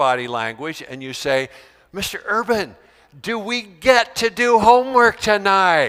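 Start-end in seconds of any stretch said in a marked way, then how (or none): 1.9-5.9 high, phony eager, fake-excited tone. Teacher showing students how to ask for homework, fake excited eager tone. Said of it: "You change your tone of voice".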